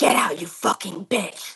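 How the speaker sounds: deep, growling demonic voice, close in the ear. Retelling a voice in your ear that jolted you awake: demonic growling voice. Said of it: "like in this growling tone".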